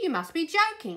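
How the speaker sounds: sniffed. The bus driver answers the Queen's request to borrow his bus; sniffed. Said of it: "sniffed the driver".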